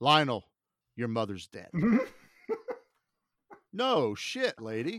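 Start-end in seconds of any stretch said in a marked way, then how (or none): 0.0-1.7 put-on deadpan, lower and faster. Retelling what the nurse said when the mom died, imitating a deadpan nurse. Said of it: "deadpan actor I've ever seen".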